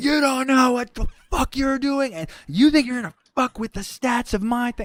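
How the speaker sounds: very high, shrill, furious raging scream. Retelling how he cornered you in the room, imitating someone screaming at you. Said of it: "he's like screaming at me".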